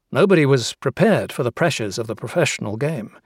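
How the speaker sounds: ordinary talk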